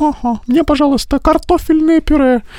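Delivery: very high, stuck-up, prissy little-lady voice. Recalling a doll game with his sister, imitating a prissy doll. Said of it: "супер такая фифа".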